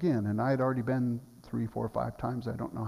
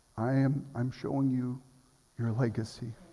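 very quiet, hushed. Retelling words the Lord spoke: very quiet. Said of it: "the Lord just very quietly said".

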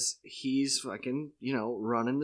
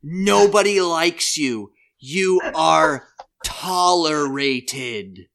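loudest voice, very loud, slow, deliberate, booming; 4 semitones higher, 10 dB louder than usual. Retell how Bill answered your remark about the script, in his loudest voice. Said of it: "in his loudest voice".

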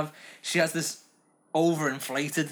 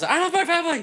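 put-on cartoon character yell, higher and louder; 14 semitones higher, 6 dB louder than usual. Quoting a cartoon character's catchphrase: imitating Gene yelling. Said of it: "Jean just yells".

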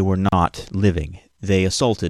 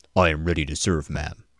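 confident robot voice, much lower; 3 semitones lower, 3 dB quieter than usual. Voicing a robot character with a new voice, answering ma'am; confident robot voice. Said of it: "Sounds more confident".

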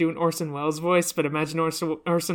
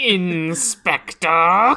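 put-on storybook narrator voice, louder; 8 dB louder than usual. Saying a line as suggested in Logan Cunningham's voice. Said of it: "give the diary Logan Cunningham's voice".

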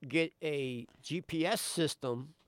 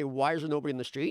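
usual speaking voice

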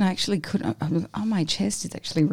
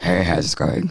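very low, deep-voiced delivery; 12 semitones lower than usual. Recalling greeting people after arriving, imitating own deep voice. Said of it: "deep voice".

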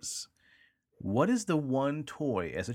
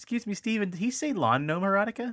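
high-pitched, prim, prissy spider voice.

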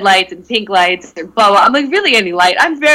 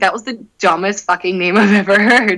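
ordinary delivery

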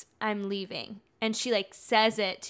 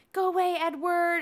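put-on tearful shouting while crying, higher; 9 semitones higher, 4 dB louder than usual. Retelling a scene where a character fakes tears: imitating someone shouting while crying. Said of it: "she comes in the house shouting".

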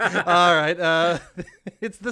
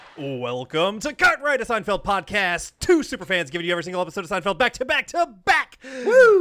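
fast, rattled-off host patter; 2 semitones higher than usual. Opening the podcast with a welcome to listeners: speaking fast. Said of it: "And I'm speaking fast".

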